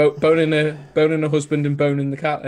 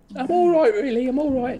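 put-on Australian accent, pitched very high; 10 semitones higher than usual. Acting out a quoted line from the story: Australian accent. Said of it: "Is that your Australian accent?".

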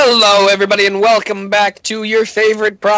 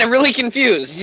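ordinary talk, nothing marked

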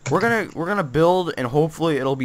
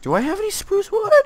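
very high voice, cracking on purpose; 4 dB louder than usual. Building with another player in a game: intentional voice crack. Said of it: "that was an intentional voice crack".

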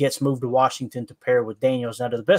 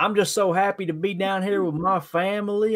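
very phoney, put-on country accent; 7 semitones higher than usual. Retelling what a man said to everybody, in the fakest country accent. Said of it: "the fakest country accent you ever heard".

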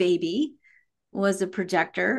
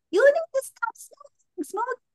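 put-on little baby voice, much higher, yelling. Retelling how she yelled from the car's back window, in a little baby voice. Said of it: "this little baby voice".

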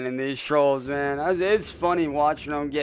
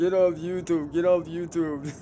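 put-on whiny voice, higher; 3 semitones higher than usual. Quoting another person to viewers, imitating a whiny voice. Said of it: "His little whiny voice".

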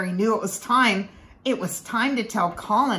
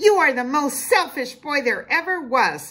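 high-pitched scream at full tilt; 7 semitones higher, 4 dB louder than usual. A girl stomps back into her cousin's room and screams at him. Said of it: "she screamed".

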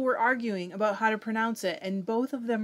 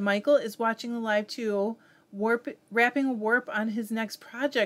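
usual speaking voice

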